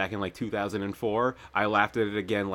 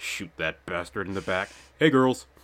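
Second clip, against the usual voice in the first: put-on muttering voice. Retelling a character wandering into a dorm room: imitating a character muttering. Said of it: "he's just muttering".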